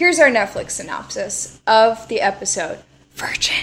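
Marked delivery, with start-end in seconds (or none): 3.2-3.6 hushed, scandalized whisper. Reading out an episode title, the scandalous word 'Virgin' whispered. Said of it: "Why do you keep whispering it?".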